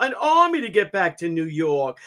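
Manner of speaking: put-on very heavy, thick New York accent. Retelling what Cuomo said about Trump: Andrew Cuomo's heavy New York accent. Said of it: "with that fucking uber New York accent".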